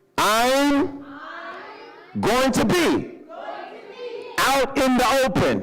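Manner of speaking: bold, emphatic, very high, very slow delivery. Leading the congregation to repeat a phrase: saying it like you mean it. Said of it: "say it again like you mean it".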